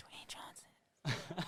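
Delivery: bashful, shy, very quiet near-whisper. Retelling own earlier answer after being told it was said quietly: imitating own quiet shy answer. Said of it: "Jonah actually said it very quietly".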